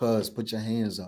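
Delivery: low, flat, dead-level, expressionless put-on monotone. Retelling what a guy said to police, repeating his words in a flat monotone. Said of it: "Like like this. Like in the this monotone".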